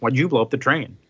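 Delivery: ordinary talk, nothing marked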